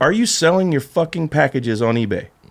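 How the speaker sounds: plain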